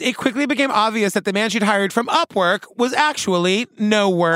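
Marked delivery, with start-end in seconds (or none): none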